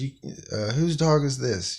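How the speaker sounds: high, startled, flustered voice. Retelling how the landlord reacted to the dog: imitating the landlord screaming. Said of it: "she's all screaming".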